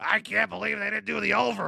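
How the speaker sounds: high, creaky sports-radio host voice. Imitating the sports radio guy talking betting lines: imitating a sports radio host. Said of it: "he sounds like this".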